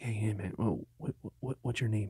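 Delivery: hushed half-whisper, close to the ear. Retelling how a character at the attraction half-whispered in the ear: imitating someone half-whispering. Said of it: "he's whispering in my ears".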